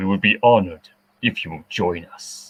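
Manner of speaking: deep dark villain voice. Doing a favorite impression for the others: Darth Vader voice. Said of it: "Doing my favorite impression".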